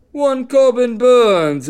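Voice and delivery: put-on English accent. Betting show host names a starting pitcher in a put-on english accent. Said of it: "as I use my English accent".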